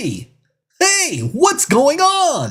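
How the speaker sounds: very high alien puppet voice with big swoops. Friends trade impressions, and one tries an ALF impression again. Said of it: "I used to do a dead on Alf impression".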